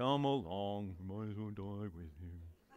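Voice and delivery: very low, soft, gloomy donkey voice. Reading Thomas's line from the passage aloud, in an Eeyore voice. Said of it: "Can you read it with an Eeyore voice?".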